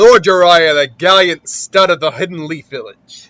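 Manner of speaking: loud, swaggering, put-on manly guy voice. Introducing a Lantern Corps guest, done in a put-on guy voice. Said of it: "I'm doing a guy voice there".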